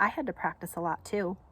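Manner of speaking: plain reading voice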